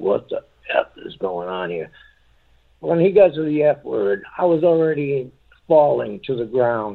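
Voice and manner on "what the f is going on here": very low, dropped deep voice. Retelling what a man suddenly said out of the blue, in a deep voice. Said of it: "In this deep voice".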